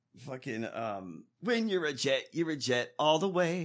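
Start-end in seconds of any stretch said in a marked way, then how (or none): none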